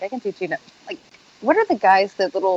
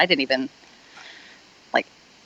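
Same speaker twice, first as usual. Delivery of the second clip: usual speaking voice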